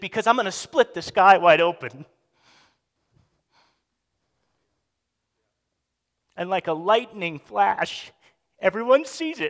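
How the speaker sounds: voice catching with emotion. Quoting what the king says to his listeners, choking up. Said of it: "I don't know why I'm choking up".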